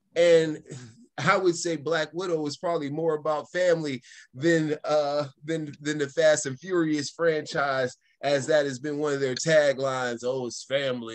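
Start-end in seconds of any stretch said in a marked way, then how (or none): 10.2-11.1 grumbling, rumbling, grumbly delivery. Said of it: "you know what he says in his grumbly voice".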